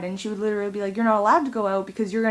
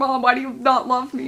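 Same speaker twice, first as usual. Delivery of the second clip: acted, very loud screaming at the top of the lungs; 4 semitones higher, 3 dB louder than usual. Retelling a fight with mom, imitating own screaming.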